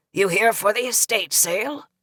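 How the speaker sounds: put-on rasping, raspy elderly old man's voice. Reading a story aloud, voicing an old man at the door: raspy old man's voice. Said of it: "he said in a raspy voice".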